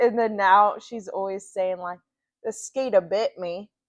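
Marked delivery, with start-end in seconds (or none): 2.4-3.6 put-on, heavily laid-on southern US accent. Retelling what she keeps saying about the bite, in a southern accent. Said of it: "like with a southern accent".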